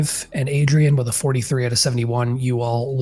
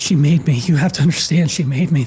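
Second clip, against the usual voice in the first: fearful pained voice; 3 semitones higher, 4 dB louder than usual. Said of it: "the fear in his voice, the pain in his voice".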